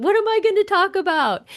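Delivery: put-on panicked delivery, very high and loud. Retelling own thoughts when asked to pick a quote: retelling own panic. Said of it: "I was panicked".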